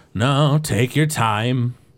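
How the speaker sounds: slow, casual, unbothered, nonchalant orc voice. Voicing an old orc who tells the party to take their time: nonchalant orc voice. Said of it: "an orc who is really nonchalant".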